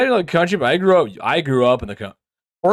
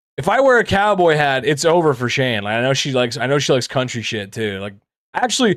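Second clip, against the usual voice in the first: normal talking voice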